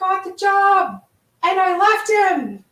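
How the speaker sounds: very high-pitched, loud, sudden yell. Retelling a woman flinging the door open with news, imitating someone yelling. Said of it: "she yells at me".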